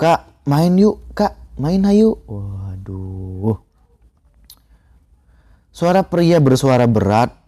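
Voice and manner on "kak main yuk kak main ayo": put-on very high, tiny small child's voice. Recounting strange voices heard in grandfather's house, the speaker does a small child's voice. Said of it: "Dari suara anak kecil ngajakin main".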